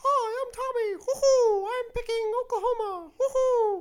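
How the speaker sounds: very high, very loud, slow, drawn-out squeak. Joking that Tommy has appeared and voicing him: Mickey Mouse voice. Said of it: "that was Mickey Mouse".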